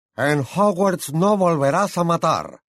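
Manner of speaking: yelled out, high, shrill shout. Reading a professor's line as he raises his wand, shouting. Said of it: "gritó Flitwick".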